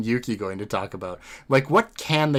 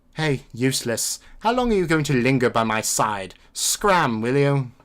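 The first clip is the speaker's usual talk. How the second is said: put-on British accent. Reading a character's game dialogue aloud: British accent as Rei. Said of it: "pull out my British accent again".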